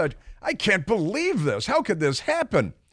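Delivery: mock incredulous tone. Acting out the incredulity heard in a man's voice on the news, imitating someone's incredulity. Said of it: "You heard the incredulity in his voice".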